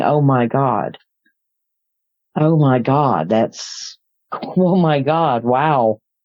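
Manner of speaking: put-on whisper. Retelling watching him land in the road: imitating own whisper. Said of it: "me go whispering".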